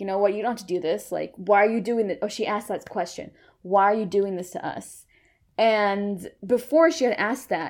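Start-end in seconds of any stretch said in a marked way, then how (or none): 0.0-4.5 put-on begging, faster. Recapping a favorite film shot, acting out Kristen begging the one looming over her. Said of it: "kristen is like begging".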